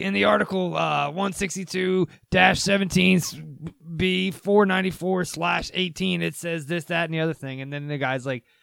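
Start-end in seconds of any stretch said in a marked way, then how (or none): 0.0-7.6 slow drawl, dragged out, rough and creaky. Retelling a podcast exchange about chemtrails, imitating Alex Jones. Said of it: "And he's like".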